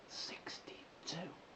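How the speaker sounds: barely audible, hushed, secretive whisper. Telling viewers their age at the end of a vlog: whispering. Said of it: "I'll whisper it".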